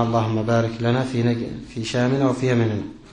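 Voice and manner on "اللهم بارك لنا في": plain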